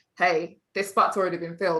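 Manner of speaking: normal talking voice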